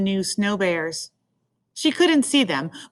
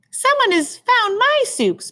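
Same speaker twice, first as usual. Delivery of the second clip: very high, squeaky little voice, sing-song; 14 semitones higher than usual. Reading a bear story aloud, the narrator voices Baby Bear finding the soup: Baby Bear's high squeaky voice. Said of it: "in her high squeaky voice".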